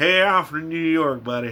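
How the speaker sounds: imitated, put-on hillbilly voice. Joking about upstate people claiming to be from New York: hillbilly voice. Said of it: "hillbilly voice".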